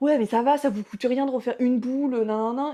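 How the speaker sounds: mock furious, angry ranting complaint. Retelling how a customer reacted to a refused scoop, mimicking an angry customer's rant. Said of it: "Et elle me pétait un câble".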